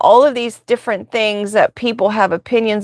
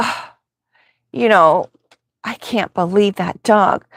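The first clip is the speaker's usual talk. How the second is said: mock scoffing. Retelling what scared passersby say about the dog: imitating someone scoffing. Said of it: "they walk away scoffing".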